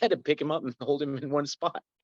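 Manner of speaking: put-on British accent. Retelling what a security guard said about a fight: British accent imitating Steve. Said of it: "in his, you know, British accent".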